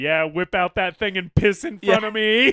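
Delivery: very loud, taunting, teasing voice. Retelling a film scene, quoting the nurse: imitating a smirking nurse. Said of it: "gives him this smirk being like".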